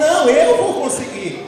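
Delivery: loud, slow, defiant tone.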